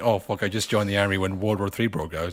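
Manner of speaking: ordinary delivery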